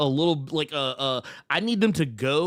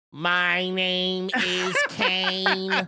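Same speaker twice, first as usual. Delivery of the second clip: put-on voice-box wrestler voice, higher; 3 semitones higher than usual. Recalling a wrestler's voice gimmick: Kane voice-box gimmick voice. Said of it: "He'd take the little thing and be like".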